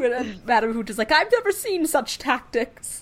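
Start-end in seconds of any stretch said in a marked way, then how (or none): 1.1-3.0 full high-pitched screech. Discussing a Quidditch match, the speaker quotes Madame Hooch: screeching Madame Hooch. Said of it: "She screeches that".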